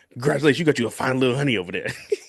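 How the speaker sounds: put-on older man voice. Retelling what an older guy in the bar said, in an old man voice. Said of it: "old dudes have that voice".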